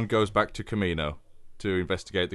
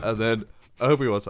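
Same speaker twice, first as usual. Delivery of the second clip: plain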